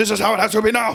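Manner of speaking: stern, high, loud drill-sergeant voice.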